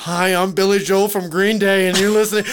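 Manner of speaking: put-on announcer, holding in laughter. Retelling a podcast sound bite: imitating someone holding back laughter. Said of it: "trying not to laugh the whole time".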